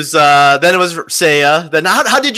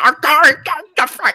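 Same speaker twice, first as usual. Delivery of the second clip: put-on muttering, higher; 10 semitones higher than usual. Retelling how a friend apologized at a concert: imitating someone muttering. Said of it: "muttering at the end".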